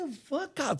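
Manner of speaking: mock fed-up, angry, pissed-off outburst, very high. Retelling telling someone at the decks to leave: imitating being pissed off. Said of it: "For the first time, I was, like, pissed".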